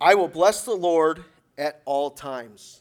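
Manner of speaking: slow, deliberate reading. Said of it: "I'll try to read it slowly".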